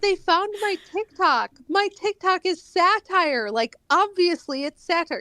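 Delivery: high-pitched, exasperated, insistent tone.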